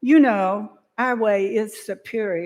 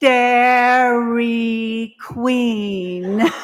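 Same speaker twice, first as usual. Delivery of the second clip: put-on deliberate, very slow, loud, drawn-out enunciation; 4 dB louder than usual. The speaker retells a woman telling him the name of the place, very slow and loud. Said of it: "she said very slowly and very loudly".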